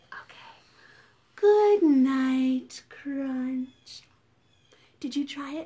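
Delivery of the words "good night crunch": gentle, calm, soothing voice with night drawn out. Showing viewers how to say good night to Crunch; calm soothing voice. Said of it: "in a calm and soothing voice".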